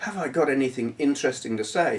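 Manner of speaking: ordinary delivery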